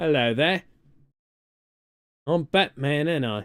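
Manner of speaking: put-on deep voice of a very old Cockney man. Playing Batman after being told to show it: eighty-year-old Cockney man voice. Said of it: "eighty-year-old Cockney".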